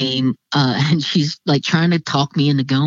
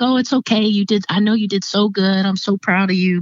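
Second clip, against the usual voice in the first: put-on happy, proud tone, higher pitch; 4 semitones higher than usual. Retelling a godmother's reply on the phone afterwards: imitating someone sounding happy. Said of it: "you could just hear it in her voice".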